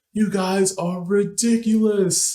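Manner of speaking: very high, shrill, high-pitched screaming. Retelling a guy who came over at two am: imitating someone screaming. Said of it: "screaming at us".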